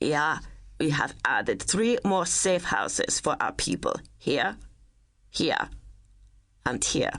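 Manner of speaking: put-on heavy, thick German accent, laid on thick. Reading a story, voicing an older man at a map: thick german accent. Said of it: "in a thick German accent".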